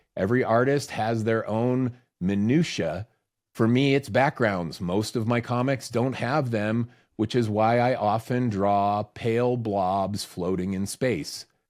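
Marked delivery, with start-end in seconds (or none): none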